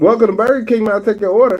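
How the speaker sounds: high, rushed, hurried delivery. Acting out how a drive-thru worker rushed an order: imitating a rushing drive-thru worker. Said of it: "I'ma be this lady".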